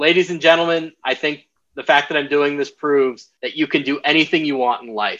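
ordinary talk

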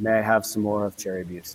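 clumsy, horrible put-on Belgian accent. Recalling what a visitor to their brewery said, in a horrible Belgian accent. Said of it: "That was my horrible Belgian accent".

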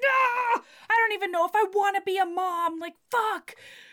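put-on, very high, frantic, panicked outburst. Retelling how a character in a book reacts; acting out real panic. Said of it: "She gets real panicked".

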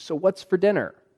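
chipper, cheery voice. Coming back into the room after storming out, asking: most chipper, cheery voice. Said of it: "in the most chipper, cheery voice".

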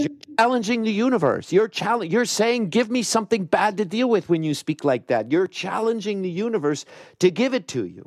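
mock very high, forceful, emphatic shout. Recounting what a woman said to them, retelling a shout. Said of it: "Sorry for shouting".

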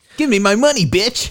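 very high-pitched cartoon hedgehog voice. Right after mentioning playing as Sonic in a new game, Sonic impression. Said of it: "That's a good impression".

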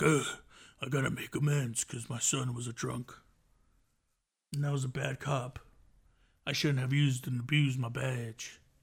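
low, gravelly, raspy cop drama voice. Describing a cop character from a TV show and quoting his lines: raspy TV cop voice. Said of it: "he has this whole raspy voice like".

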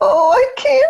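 put-on very high, tiny, helpless child's voice. Describing aggressive children feigning helplessness, imitating their little high voice. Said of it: "I get the little high voice".

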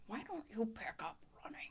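breathy, whispered fatherly voice. Retelling what her dad said to her: Sam voice. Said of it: "Do the Sam voice".

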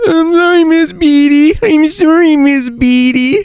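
very high, blubbering, whimpering fake sob. Retelling how a kid cried when a teacher asked about homework, imitating Curtis crying. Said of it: "He would cry".

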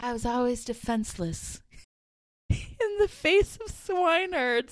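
theatrical, dramatic Southern belle voice, lamenting. Describing a book character, the speaker imagines her lines: Streetcar Named Desire voice. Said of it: "like a Streetcar Named Desire kind of voice".

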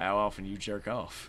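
low, drawling celebrity impression. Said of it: "in my best McConaughey impression remark".

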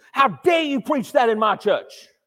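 mock fuming, loud, furious outrage. Retelling how the leader of the church ran up after the sermon: imitating an angry church leader. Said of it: "they were obviously fuming with anger".

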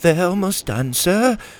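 high, stuttering, halting, stammering. Narrating a story, a pirate reports to the captain, stuttering. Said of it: "stuttered a pirate in the room".

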